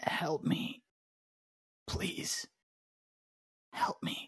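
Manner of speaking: very slow, whispered, desperate pleading male voice. Narrating a scene for the others, voicing a different, unseen speaker: male voice. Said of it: "This time a male voice".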